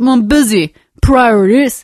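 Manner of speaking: put-on Australian accent. Acting out a partner's dismissive reply to a request: australian accent. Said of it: "that was your best, uh, Australian accent".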